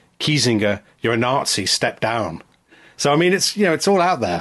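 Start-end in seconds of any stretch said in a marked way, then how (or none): none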